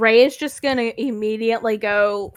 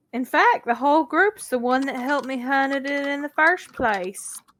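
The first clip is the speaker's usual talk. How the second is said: bad, botched put-on southern US accent; 4 semitones higher than usual. Speaking in character in a scene, with a bad southern accent. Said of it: "That was a bad southern accent".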